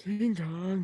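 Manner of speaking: put-on old man voice. Listing monster movies with a co-host: put-on old man voice. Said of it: "That's my old man voice".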